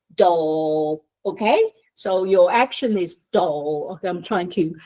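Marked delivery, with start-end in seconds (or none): 0.2-1.1 "do" sung very low and drawn out. Teaching the second tone, starting at the lowest point of the voice range. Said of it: "You find your lowest point in your voice range".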